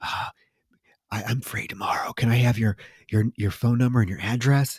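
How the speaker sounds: put-on hushed whisper. Retelling a story, acting out a man whispering to a woman: retelling a whisper. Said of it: "he goes and whispers to her".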